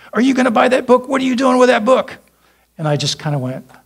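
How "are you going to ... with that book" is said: put-on very high, shrill, loud screaming. Retelling a man in the bookstore confronting them: imitating someone screaming. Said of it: "started screaming at me".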